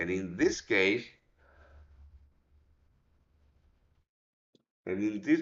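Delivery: speech spoken mid-yawn. Speaker explaining a trading setup, yawning while talking. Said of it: "I'm sorry, I was yawning".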